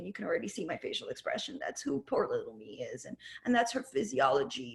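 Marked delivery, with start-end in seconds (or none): 0.0-3.1 put-on pitiful, self-pitying voice, lower and quieter. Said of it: "she talks like this".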